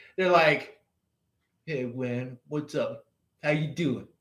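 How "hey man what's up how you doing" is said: hushed, quiet, cocky street-tough swagger. Describing suburb kids who act tough, imitating a tough thug. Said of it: "they got that like um thug".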